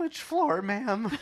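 very high, trying-to-be-suave, smooth voice. Retelling a past moment in an elevator, put-on oddly high smooth voice. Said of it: "voice becomes like oddly higher when you're trying to be smooth".

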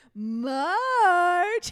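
very high, loud, drawn-out, stretched call. Retelling a cartoon scene, calling a praying wife back to bed: imitating Homer Simpson. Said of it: "and he's like".

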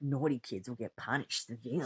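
imitated whispering. Retelling what he whispered in her ear, imitating a whisper. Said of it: "he's like whispering in her ear".

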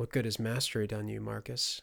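plain reading voice

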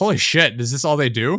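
usual speaking voice

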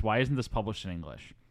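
ordinary delivery

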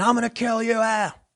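slow, high, drawn-out acted-out scream. Acting out a guy with a baseball bat threatening a cop: acting out a scream. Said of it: "and he's screaming".

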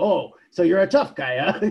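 taunting, goading voice. Retelling an early comic scene, imitating Superman shaking a guy down. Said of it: "goes in and basically shakes this guy down".

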